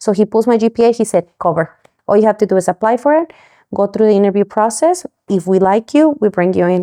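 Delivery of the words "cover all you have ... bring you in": ordinary talk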